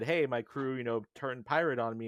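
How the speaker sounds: ordinary talk, nothing marked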